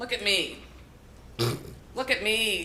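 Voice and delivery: put-on proud tone. Describing a proud father posting photos of himself, imitating the proud father. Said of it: "I love her impression of him as well".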